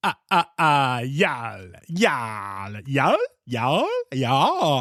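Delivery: bad vampire voice, swooping pitch, y'all stretched out. Telling listeners about an earlier voice attempt, redoing it in a bad vampire voice. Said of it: "I tried to say y'all as my bad vampire character".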